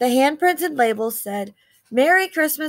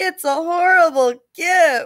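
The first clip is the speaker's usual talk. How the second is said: high, groaning, griping voice; 5 semitones higher, 3 dB louder than usual. Mary reacts as the children look at holiday slime; groaned. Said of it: "Mary groaned".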